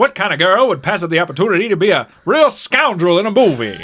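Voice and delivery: put-on old-fashioned mid-Atlantic accent. Quoting a woman from the nineteen forties or fifties about taking a role, in an old mid-Atlantic accent. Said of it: "that mid Atlantic accent that people used to have".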